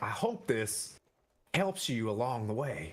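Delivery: whispered voice. Narrating a game scene, a character hands a companion a hooded lantern: whispering. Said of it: "He whispers to Quaddle".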